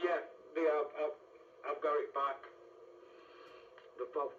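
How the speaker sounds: talking with mouth full. Answering an unexpected call back while eating a sandwich, talking with mouth full. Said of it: "Excuse me, I took a bite of sandwich".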